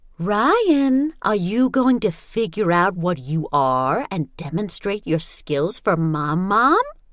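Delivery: sickeningly sweet, high, drawn-out, syrupy. A mother speaks to her son at the table, sickeningly sweet. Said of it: "in a sickeningly sweet voice".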